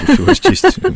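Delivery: high, loud, playful mock stammering with "uh".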